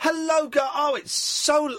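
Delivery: very high, slow, put-on flamboyant theatrical manner. Showing listeners how to greet the shop staff: put-on camp queen voice. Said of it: "like an old camp queen like I was just being there".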